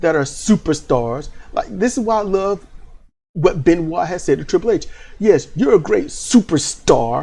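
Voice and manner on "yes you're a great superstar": disgusted delivery, dripping with distaste, ew-laden. Quoting Benoit speaking to Triple H: imitating Benoit's disgusted tone. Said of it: "you can hear the ew in his voice".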